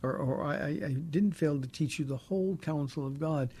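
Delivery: plain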